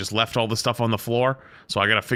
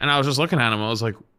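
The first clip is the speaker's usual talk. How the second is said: normal talking voice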